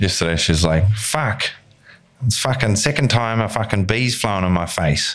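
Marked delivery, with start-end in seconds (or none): 0.9-5.2 put-on blunt, brash Australian accent. Speaker quotes Shiley from yesterday, imitating Shiley's brash Aussie accent. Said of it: "she's got quite a brash Aussie accent".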